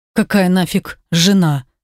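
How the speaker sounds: ordinary delivery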